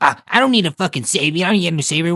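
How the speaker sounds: put-on dismissive voice. Speaker complains about a show character who rebuffs Peacemaker's help, mocking her brush-off. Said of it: "she just plays off like".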